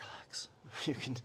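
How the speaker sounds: soft, hushed, coaxing whisper. Guiding a class through a held stretch, whispering. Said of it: "I'm whispering".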